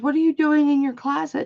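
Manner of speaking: high-pitched, pissed-off, angry, demanding voice. Retelling how mom found them hiding in the closet: imitating an angry mom. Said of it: "she was pissed at me".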